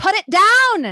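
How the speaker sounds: very high voice projected outward. Describing a voice from the back of the house, relaying it as a voice thrown at you. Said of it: "more like it's being thrown at you".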